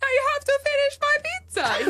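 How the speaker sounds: very high-pitched cartoon Italian voice. Retelling how Renato refused to stop eating: imitating Renato sounding like Super Mario. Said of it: "He literally sounded like Super Mario".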